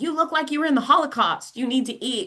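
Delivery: mock high-pitched screaming, hollering voice. Retelling what a mother screamed during cancer treatment: imitating mother screaming. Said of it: "my mother was screaming at me".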